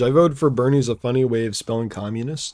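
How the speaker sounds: plain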